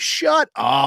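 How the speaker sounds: sudden, called-out screamed outburst like a heckle. Recounting a girl in the crowd yelling at a panelist, retelling her scream. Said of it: "just screaming like".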